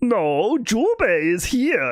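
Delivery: high, slow, throaty squeezed voice. Speaker demonstrates how Campy's voice differs from Jubei's, Campy's voice. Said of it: "Campy is more like this".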